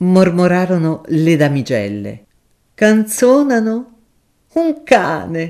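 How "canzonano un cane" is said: tipsy, jeering, sneering outburst, raised voice. Narrating a lawyer answering the young ladies: tipsy sneering exclamation. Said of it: "esclamò l'avvocato con un soghigno da brillo".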